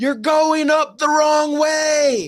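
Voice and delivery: acted heckling shout. Retelling heckling the crowd from the stands: retelling his own yelling. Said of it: "I was yelling at everybody".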